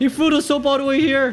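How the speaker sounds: angry. Speaker venting at someone they just called dumb; angry. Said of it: "I'm actually so mad".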